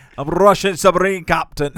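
loud, put-on Scottish accent. Bringing up The Hunt for Red October, introduce yourself as a Scottish-accented Russian submarine captain. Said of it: "Okay, Sean".

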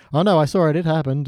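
ordinary talk

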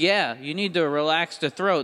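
ordinary delivery

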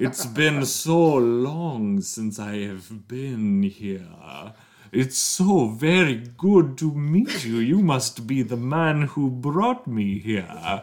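grand, theatrical vampire voice. A game master voices a bat turned man greeting the players: grand theatrical Dracula voice.

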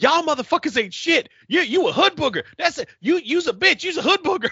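put-on, very high-pitched, furious, angry yelling. Recounting a woman's 4 a.m. phone call, imitating her yelling. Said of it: "the first thing she starts yelling".

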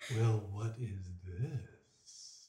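very low, hushed, deep creature voice. A narrator voices an unseen creature addressing the players, deep voice. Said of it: "you hear a deep voice go".

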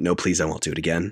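ordinary talk, nothing marked

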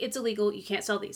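mock completely straight, dead serious, earnest. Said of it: "he was dead serious".

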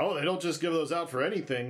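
ordinary delivery

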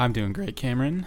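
cracking, breaking voice. Answering his co-host's greeting at the start of the show, voice cracking. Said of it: "My voice just cracked".

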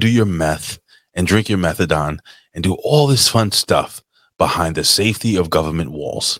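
normal talking voice

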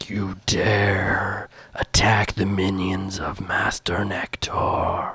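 slow, echoing disembodied voice, dare drawn out. Voicing a voice that echoes through the room from a glowing prism: echoing disembodied voice. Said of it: "echoes through the room".

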